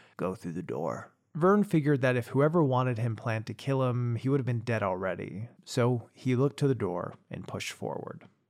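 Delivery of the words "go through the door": very low, soft, gruff voice. Reading a story, the narrator voices a man giving Vern an order: gruff voice. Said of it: "the gruff voice saying".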